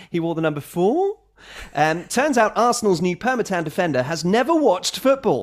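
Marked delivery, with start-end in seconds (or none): 0.1-1.2 upward questioning lilt rising on 4. Retelling a player's answer about his shirt number: rising question intonation on 4. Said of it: "He offered it up with the emphasis on the question mark".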